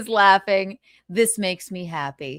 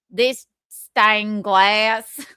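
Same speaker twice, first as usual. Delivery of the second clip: put-on Nashville accent; 3 dB louder than usual. Repeating the woman's line after the video plays: imitating a Nashville accent. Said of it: "This is obviously a Nashville accent".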